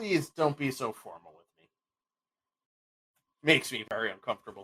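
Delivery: speaking through a chuckle. King Brahm greets visitors who bow to him, chuckling while talking. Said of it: "He chuckles and is like".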